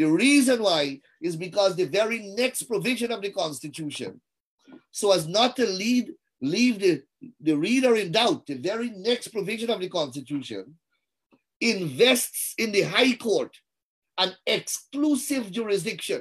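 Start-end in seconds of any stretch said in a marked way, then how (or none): 14.5-15.5 heavy stress laid on "exclusive". A speaker making a legal argument about the constitution, stress on 'exclusive'. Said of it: "And I emphasize the word exclusive".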